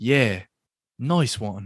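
half-listening, checked-out, distracted, absent-minded tone. Recapping a scene, the speaker imitates Butcher's distracted reply. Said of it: "You even got like the tone down".

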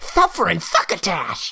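animated cat voice. Doing an impression after being told the line: Sylvester the Cat impression. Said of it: "Sylvester the Cat's is Suffering Succotash".

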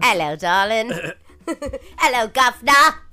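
loud, hammy, badly done Cockney accent.

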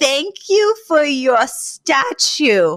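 very loud, slow, high, deliberate delivery. Retelling a mother talking to a foreigner: imitating someone speaking very loud and slowly. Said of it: "very loud and slowly and, like, with pantomime".

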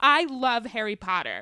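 mock shouting. Reading aloud a website comment written in all capitals, mock shouting. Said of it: "Stop yelling at me".

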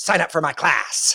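devilish, possessed-sounding demonic voice, pitched high. Describing how a caricature video always ends, quoting her in a demonic voice. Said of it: "she says in a kind of really demonic voice".

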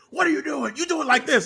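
mock squealing, very high-pitched, shrill yell. Acting out Pat McAfee scolding Pete Dunne: Pat McAfee yelling. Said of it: "Pat McAfee yelled at him".

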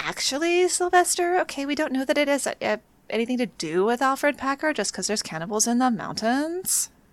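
rising uptalk intonation over creaky vocal fry. The speaker rebuts Sylvester's movie review: mock uptalk and vocal fry. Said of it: "actioning him with my uptalk and my vocal fry".

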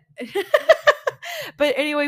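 laughing, high-pitched and loud.

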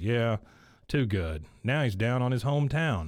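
ordinary talk, nothing marked

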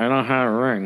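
ventriloquist-style delivery through clenched teeth. Recounting speaking to Jay and the preacher, through clenched teeth. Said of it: "through my clenched teeth".

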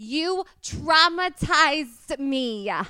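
put-on high yell in a Jersey accent. Showing how you get into a Jersey accent, imitating Sammi Sweetheart yelling at Ronnie. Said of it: "I go into Sammy's Sweetheart when she was yelling at Ronnie".

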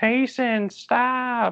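yelled in a high voice.

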